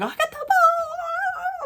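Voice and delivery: play-acted, very high, shrill scream, "ball" stretched long. Retelling screaming on the Jumbotron: retelling own scream. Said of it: "'cause I'm screaming".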